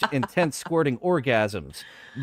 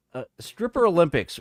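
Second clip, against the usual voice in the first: ordinary delivery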